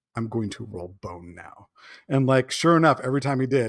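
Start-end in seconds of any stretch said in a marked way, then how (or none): 0.1-1.6 dramatic delivery, lower and quieter. Retelling how a game master announced his special die: imitating a GM's dramatic voice. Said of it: "it was very dramatic".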